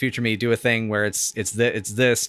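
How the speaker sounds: ordinary talk, nothing marked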